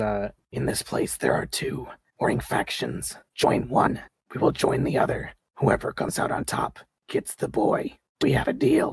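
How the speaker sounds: hoarse, raspy rasp all the way through. A game master voices a woman who has just shot someone, rasping:. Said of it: "She rasps out".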